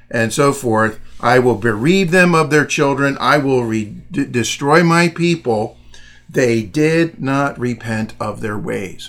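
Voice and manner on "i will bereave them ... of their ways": ordinary talk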